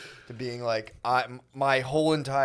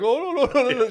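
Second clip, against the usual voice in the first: Indian accent, pitched high; 12 semitones higher, 5 dB louder than usual. Suggesting to the other speaker how to react, in an Indian accent. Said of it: "an Indian accent".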